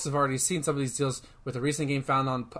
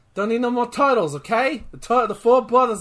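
put-on New York accent, higher and louder; 8 semitones higher, 6 dB louder than usual. Arguing there should be only four turtle brothers: New Yorker accent. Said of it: "I don't know why I'm trying to talk like, like a New Yorker".

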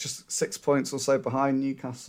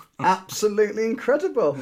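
sarcastic, swooping, pitched-up fake enthusiasm; 8 semitones higher than usual. Teasing a co-host about extra days off: sarcastic tone. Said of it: "a hint of sarcasm in that, in your voice".

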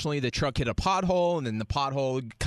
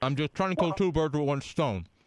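talking with mouth full while eating. Answering an angry customer on the phone, talking with mouth full. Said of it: "with a mouthful of food?".

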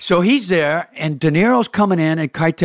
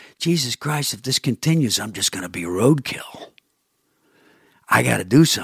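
put-on muttered aside, lower and quieter; 6 semitones lower, 5 dB quieter than usual. Retelling what the director said while walking past: imitating James Mangold muttering under breath. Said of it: "he says to me under his voice".

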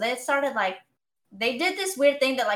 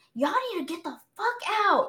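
mock yelling, higher pitch; 7 semitones higher than usual. Retelling a man who yelled at everybody: retelling a yell. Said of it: "yelling at everybody".

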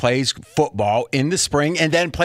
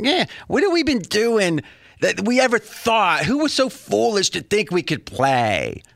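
put-on whiny voice, high and swooping; 6 semitones higher than usual. Speaking as the aloof people being described: put-on whiny voice. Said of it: "I'll get a whiny voice".

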